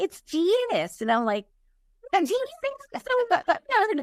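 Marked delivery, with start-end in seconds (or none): 0.0-1.0 put-on southern American accent. Retelling a phone call, answering who is calling, imitating Janice's southern accent. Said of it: "I hear this this person with this southern accent".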